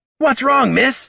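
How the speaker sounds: loud, barked delivery, very high pitch. A kobold calls out to an elf woman, barking. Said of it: "Barked Jenner".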